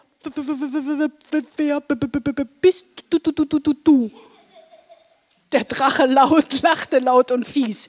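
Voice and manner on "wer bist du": halting, stuttering stammer on each word. Reading a children's story, the narrator voices a character asking the dragon who he is: stuttering. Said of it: "Er stotterte".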